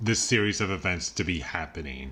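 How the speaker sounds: ordinary talk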